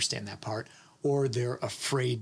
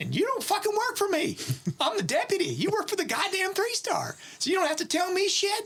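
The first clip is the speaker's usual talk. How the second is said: put-on strong, broad, heavy North Carolina accent, swooping. Retelling what the deputy told him about his authority, heavy north carolina accent. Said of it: "he has this like real heavy North Carolina accent".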